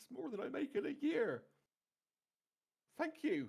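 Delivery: very high, trembling, quivering, frightened voice. Voicing a frightened halfling thanking a player for gold: frightened quivering halfling. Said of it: "quivering and carrying away from you".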